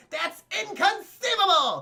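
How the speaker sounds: squealed out, high and loud. Retelling a movie scene for chat, quoting the line: imitating Vizzini. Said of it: "What does Vizzini say?".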